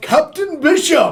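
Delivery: loud resonant voice. In a role-playing game, calling to a captain with magic, in a booming voice. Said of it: "using thaumaturgy, I really boom".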